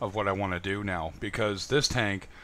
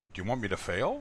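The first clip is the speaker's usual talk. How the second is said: put-on facetious tone. Retelling own question to a friend about the move: imitating own facetious tone. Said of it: "I was being a little facetious".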